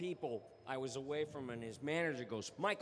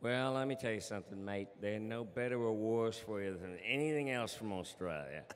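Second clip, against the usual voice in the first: low, put-on Australian accent; 6 semitones lower than usual. In a mock snack pitch, the salesman answers a doubter in an Australian accent. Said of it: "That was an awesome Australian accent".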